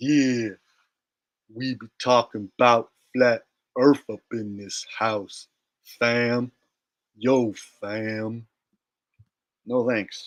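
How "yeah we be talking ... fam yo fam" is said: very slow, drawn-out delivery. Mocking someone's slow way of talking: imitating Bro Sanchez talking slowly. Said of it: "Somebody who talks that slow".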